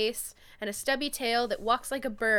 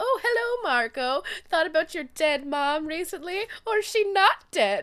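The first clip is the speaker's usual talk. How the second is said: high, loud, prancing villainous fairy voice; 6 semitones higher, 5 dB louder than usual. Retelling how the creature taunts Jake: imitating a villainous fairy. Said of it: "like some sort of, like, villainous fairy".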